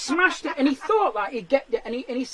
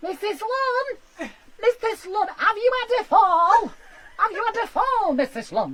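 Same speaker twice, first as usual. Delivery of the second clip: tiny, small, high-pitched little voice; 8 semitones higher, 3 dB louder than usual. Retelling the voice heard after pressing the button, little voice. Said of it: "this little voice going".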